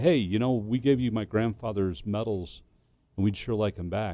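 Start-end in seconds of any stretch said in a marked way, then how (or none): none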